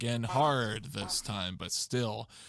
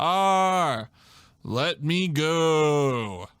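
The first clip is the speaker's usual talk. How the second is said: put-on very loud, very slow, drawn-out Southern accent; 5 semitones higher, 9 dB louder than usual. Reading quoted lines of Sonic characters in a story aloud: Southern accent. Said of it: "speak in a Southern accent whenever we're quoting any Sonic character".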